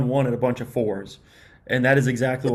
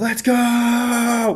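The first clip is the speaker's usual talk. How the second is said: put-on very high-pitched shriek with long drawn-out go; 11 semitones higher, 3 dB louder than usual. Retelling watching a game replay alone in a room: retelling own scream. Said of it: "just screaming at my computer".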